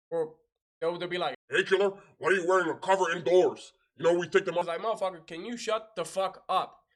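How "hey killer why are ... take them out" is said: show-off, macho alpha tone. Complaining about an overeager fellow Marine, quoting him while imitating a show-off Marine. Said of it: "try to be alpha and be the most moto".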